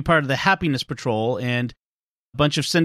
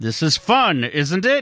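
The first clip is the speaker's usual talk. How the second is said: strained speech through clenched, gritted teeth. Acting out a parent on a family outing going badly, mimicking speech through gritted teeth. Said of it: "saying through ever more tightly gritted teeth".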